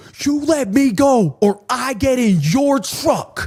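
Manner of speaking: very slow, high, drawn-out, insistent yell. Retelling a guy in bumper to bumper traffic: imitating someone yelling. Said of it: "He's yelling at me".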